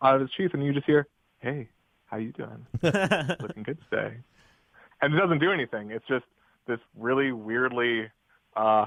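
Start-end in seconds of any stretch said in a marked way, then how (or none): 1.4-4.2 seductive, flirty whisper, quieter and slower. Voicing an imagined knife that hits on people, in a seductive whisper. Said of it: "the knife of seductive whispering".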